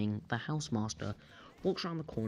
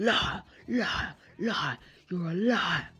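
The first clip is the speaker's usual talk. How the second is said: mock shrill, high, loud, accusing, repeated screaming; 6 semitones higher, 5 dB louder than usual. Retelling a man who got right up in their faces; retelling a scream. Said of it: "And he screams".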